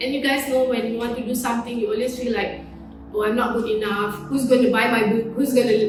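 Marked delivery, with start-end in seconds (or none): none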